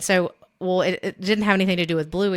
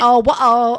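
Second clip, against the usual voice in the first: raised, bad fake British accent drifting into French; 5 semitones higher, 9 dB louder than usual. Imitating a niece's bad British accent that drifts toward French. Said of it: "sounding like she was French".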